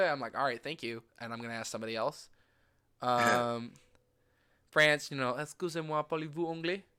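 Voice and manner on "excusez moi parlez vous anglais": put-on well-practised French accent. Retelling how the speaker asked people in France if they spoke English, French accent. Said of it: "because I had the accent pretty down".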